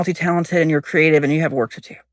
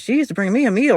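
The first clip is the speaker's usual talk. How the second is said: particular lilt, inflection pitched up; 5 semitones higher than usual. Retelling what a neighbor once said to her: imitating a neighbor's inflection. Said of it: "the way he said it was just like".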